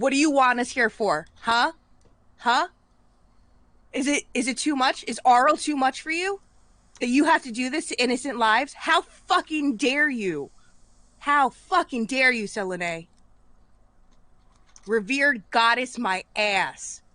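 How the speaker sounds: high, enraged, furious screaming rant. Voicing a character who snapped at a goddess in her temple: screaming in anger. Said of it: "Now she's just screaming in the temple".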